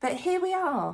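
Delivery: voice cracking up high on a high note. Introducing an old video she made at twenty, her voice cracking. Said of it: "Did you hear my voice crack?".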